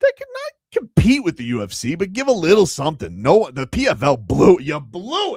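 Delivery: loud, stretched-out, swooping yell. Complaining that the PFL blew their chance: yelling. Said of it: "I don't know why I'm yelling".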